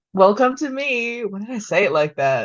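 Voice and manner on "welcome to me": theatrical circus clown voice, announcing style. A co-host, just unmuted and welcomed to the show, greets everyone: like a clown's circus entrance. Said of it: "Like a clown doing an entry at the circus".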